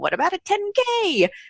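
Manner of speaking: high, slow, tiny cartoon creature voice. Retelling what a little gizmo on their shoulder suggested, in a little Flintstones gizmo voice. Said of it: "the little gizmo popped back up".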